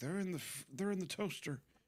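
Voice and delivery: put-on very high-pitched, tipsy, wine-drunk mom voice. Retelling what a friend's mom said every night: imitating a drunk mom. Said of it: "this one is the classic wine drunk mom".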